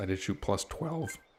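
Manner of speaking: voice cracks and breaks on the words. Answering a question about a golf score, with a voice crack. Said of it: "that was a terrible voice crack".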